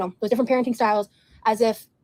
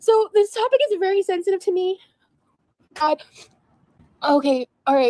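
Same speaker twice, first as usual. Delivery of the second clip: tearful, crying voice, higher pitch; 9 semitones higher than usual. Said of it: "I'm sorry for crying".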